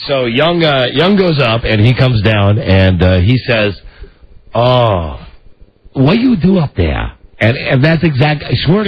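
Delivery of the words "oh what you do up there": put-on heavy Japanese accent, swooping and slow. Retelling what the DirecTV repairman said after the roof: Young's heavy Japanese accent. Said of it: "he has the heavy accent".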